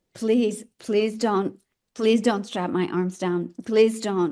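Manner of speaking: urgent, desperate, begging tone. Retelling begging a nurse not to strap the speaker's arms down, retelling pleading. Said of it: "and I'm just pleading".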